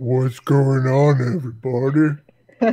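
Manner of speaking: every word dragged out, sedated-sounding. Mocking how their own recorded voice sounds: Andre the Giant with a Valium. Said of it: "I hear my voice and it sounds like".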